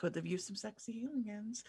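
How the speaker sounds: passive-aggressive mutter under the breath. Walking past another character in stealth mode: passive-aggressive mutter under breath. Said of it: "super passively aggressively under my breath just say".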